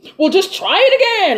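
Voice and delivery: mock, dripping sarcasm, loud and very high. Retelling what she said back to the dad, mock-sarcastic retelling. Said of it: "Like like real like real sarcastic".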